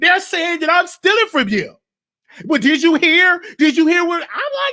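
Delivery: mock yelling. Retelling how a granddaughter yelled at her mother, retelling someone yelling. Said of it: "You yelling, you yelling at your mama".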